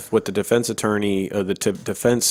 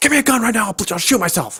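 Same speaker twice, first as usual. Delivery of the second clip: mock furious outburst. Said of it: "he's like".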